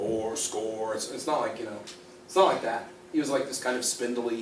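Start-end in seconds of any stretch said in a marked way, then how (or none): 0.0-0.9 deep, solemn bass voice full of gravitas. Illustrating how people imagine a solemn delivery with gravitas, in a super deep bass voice. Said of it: "like super duper bass voice that vibrates your coffee table".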